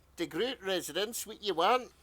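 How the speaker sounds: put-on old woman's voice with a Scottish accent. Asked to play a mum answering a call, in an elderly scottish lady accent. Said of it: "Let's hear your elderly Scottish lady accent".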